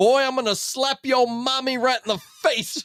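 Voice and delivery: blustering cartoon rooster voice, high southern drawl. Imagine a dad coming home after his team only scored eight points, in a Foghorn Leghorn voice. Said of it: "Is this dad Foghorn Leghorn again?".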